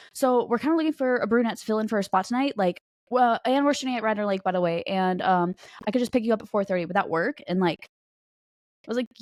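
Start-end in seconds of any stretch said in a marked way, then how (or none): none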